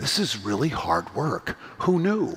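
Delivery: quiet, hushed, secretive voice. Speaker retells what a woman said when asked how it's going, quiet hushed voice. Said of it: "in a quiet, hushed voice".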